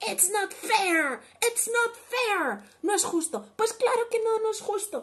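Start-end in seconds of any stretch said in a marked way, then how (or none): 0.0-2.6 furious yelling, higher and louder. Reading a picture book to children, a character's angry shout. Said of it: "And shout like".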